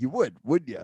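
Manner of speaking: loud, pushy, pressing salesman voice. Retelling a drum shop talk, imitating a pushy salesman. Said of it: "he's doing that to me. He's like, giving".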